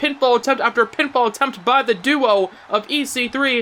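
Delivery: ordinary delivery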